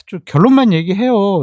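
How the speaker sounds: loud, annoyed, impatient, irritated tone. Guessing how a line was delivered from the transcript: mock-annoyed. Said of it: "이렇게 짜증 얘기했는지".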